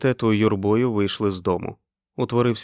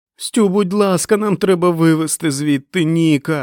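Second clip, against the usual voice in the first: high, loud, desperate pleading scream; 7 semitones higher, 5 dB louder than usual. A woman cries out to a man over a radio link, screaming. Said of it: "закричала Френ".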